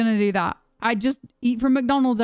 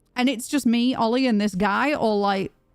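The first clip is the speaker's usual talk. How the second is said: ordinary talk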